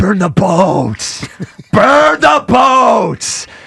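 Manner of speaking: slow, stretched, rising scream from the gut. Showing how callers must scream the phrase at the end of a call: screaming from the gut. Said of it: "you're going to have to scream it. Say it with your gut".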